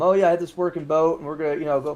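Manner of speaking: usual speaking voice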